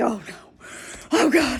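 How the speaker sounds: acted frightened, scared, dreading tone. Retelling own reaction at a convention panel: imitating own scared reaction. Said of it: "I was so scared".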